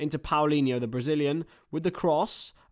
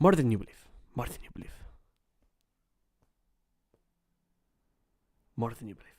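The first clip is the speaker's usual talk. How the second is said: low, rattled-off repetition; 4 semitones lower than usual. Watching a match and showing a football manager impression: Pep voice. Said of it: "I can do Pep".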